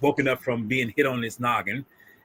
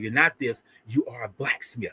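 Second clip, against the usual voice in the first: imitated streetwise, street-style talk, quieter; 4 dB quieter than usual. Retelling what a character says to a blacksmith: retelling a line streetwise. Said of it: "I'm gonna say it kind of streetwise".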